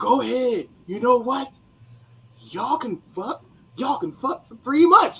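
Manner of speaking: put-on loud hollering yell. Retelling what a man started yelling out at the speaker, retelling a yell. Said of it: "he starts yelling out".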